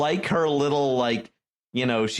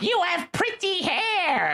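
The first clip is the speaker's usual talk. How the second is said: very high-pitched fairy-tale wicked witch voice. Retelling a character's line from a show: wicked witch voice. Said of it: "like this wicked witch voice".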